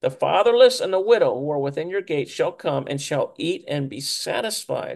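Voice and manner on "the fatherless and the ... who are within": ordinary delivery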